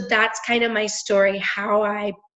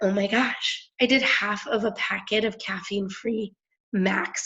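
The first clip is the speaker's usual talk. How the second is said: usual speaking voice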